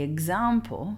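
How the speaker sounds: "example" stressed on the first syllable. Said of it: "the accent is on the A".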